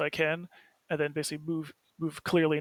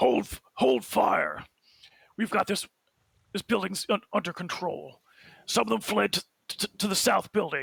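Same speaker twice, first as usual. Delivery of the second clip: rough-edged, creaky, commanding call; 4 semitones higher than usual. Describing his scene, ordering the others to hold fire, in a booming voice. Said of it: "in a booming booming voice".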